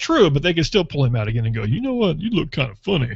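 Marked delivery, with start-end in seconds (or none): 1.6-3.2 put-on Texas accent. Imagining security pulling him aside again, in a put-on texas accent. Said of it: "That's how they would talk in Texas".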